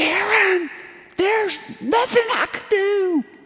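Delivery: very high, exasperated, frustrated scream. Retelling being stuck on the climb, shouting up: imitating own scream. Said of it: "I screamed at the top of my lungs up at him".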